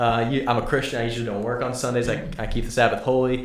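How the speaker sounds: ordinary talk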